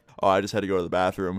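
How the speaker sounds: ordinary talk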